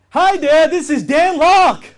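overhyped, far too pumped-up, very high and loud. Showing how callers sound to a prospect: an overly hyped, excited greeting. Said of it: "they sound too enthusiastic, too hyped up, too excited".

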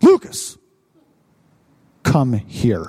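low-pitched, firm, fatherly voice. Retelling how a preacher called someone up in church: imitating a firm fatherly call. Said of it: "They all felt a strong arm of a father".

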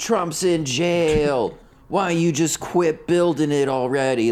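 put-on high, slow, rambling shouted rant, "jail" stretched out. Retelling a guy who came up at the mexican border, imitating a man yelling. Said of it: "He's just yelling a bunch of shit".

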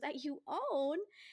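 cute, sweet, endearing tone. Telling a story, quoting a woman's question that wasn't shrill: imitating someone asking cutely. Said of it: "She just goes in a really cute way".

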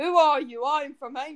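Australian accent, said loudly.

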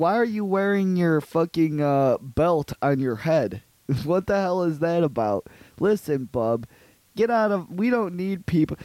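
hostile, belligerent small-town cop voice. Retelling what the cop said about shaving people: imitating the cop. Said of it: "He says".

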